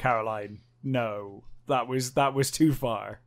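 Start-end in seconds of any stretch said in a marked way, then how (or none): none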